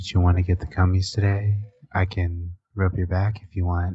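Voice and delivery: put-on ASMR-style whisper. Joking after asmr comes up, pretending to soothe listeners: mock asmr voice. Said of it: "I tried to listen to one of those S M R things".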